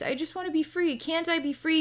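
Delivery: very high, small, pleading, innocent voice. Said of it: "this innocent little voice".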